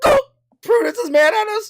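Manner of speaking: shrill, very high, very loud put-on squeak. Acting out what another player will say next, high-pitched voice. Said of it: "just like goes high pitched voice".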